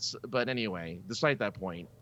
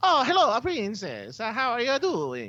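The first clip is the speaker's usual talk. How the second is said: very high, loud, slow, exaggerated cartoon voice; 5 dB louder than usual. Speaker mocks what a whole movie of this dialogue would sound like, Mario voice. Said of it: "a whole movie where the dialogue goes".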